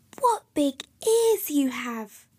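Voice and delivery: whispering. A girl speaks to her grandmother, whispered.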